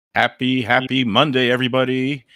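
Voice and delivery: very loud forced cheer that comes out grim. Greeting everybody at the start of another episode, grim while trying to sound happy. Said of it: "I don't know why I sounded pretty grim there".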